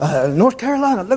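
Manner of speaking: high, excited gushing. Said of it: "she's talking about".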